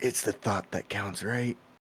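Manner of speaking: very quiet, soft whispered aside. Mouse leans over to Mako in the distance, whispering. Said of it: "and he's just gonna whisper".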